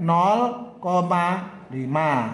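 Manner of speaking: slow, deliberate, drawn-out "nol koma lima".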